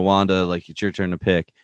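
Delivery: ordinary talk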